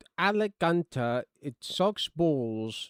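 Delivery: very slow, robotic text-to-speech voice. Describing the Twitch voice that reads out donations: imitating Twitch donation text-to-speech voice. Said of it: "the Twitch one that's like, uh, wh-, whenever there's a dono, it's like".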